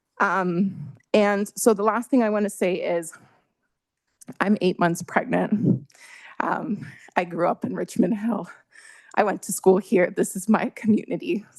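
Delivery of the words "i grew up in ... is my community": emotional, choked-up voice full of feeling. Eight months pregnant, addressing the counselors, getting emotional. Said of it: "I'm just getting emotional".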